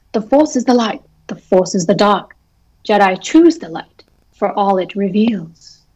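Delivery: prim, fussy droid-like voice. Quoting a Jedi passage as C-3PO translates it, C-3PO voice. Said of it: "That was a good 3PO voice".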